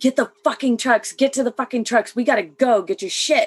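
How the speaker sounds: mock soldier voice, barking, urgent, loud shouted yelling. Retelling the first sergeant and others running to the trucks: imitating people yelling. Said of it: "them yelling".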